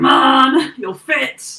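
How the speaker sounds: loud, high-pitched, angry and fed-up grumble. Voicing a character shoving a book onto a full shelf: angry, shoving books. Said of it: "angrily, like, shoving one on a shelf".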